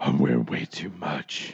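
very low, hushed hero voice. Playing along in a comedy bit, answering a question in Batman voice. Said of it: "You sound like Batman".

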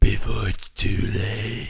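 put-on gravelly superhero voice. Playing a late-night radio host telling listeners to call their mom: Batman voice. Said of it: "Batman, where he tells you to call your mom".

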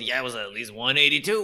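put-on rural Southern US accent. Joking about storm survivors' tall tales, redneck accent as Jim Bob. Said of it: "That was [name]'s redneck accent".

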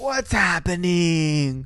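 slow, drawn-out screaming yell.

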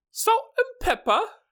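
posh British woman voice, pitched way up. Doing an impression for a co-host to label, posh British woman voice. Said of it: "It's a posh British woman at trivia night".

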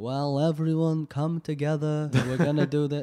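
nasal, held-nose voice, like nose pinched. Imitating a senator's voice, like holding his nose: imitating Chuck Schumer. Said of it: "holding his nose".

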